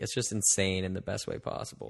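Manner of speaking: ordinary talk, nothing marked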